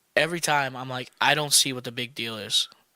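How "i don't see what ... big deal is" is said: normal talking voice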